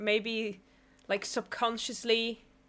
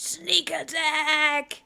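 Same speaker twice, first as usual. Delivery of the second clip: play-acted, high, shouted cartoon-style war cry; 6 semitones higher, 5 dB louder than usual. Reacting to Luffy charging at him, imitating Sokka's yelled battle cry. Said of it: "maybe don't yell as you're running towards him".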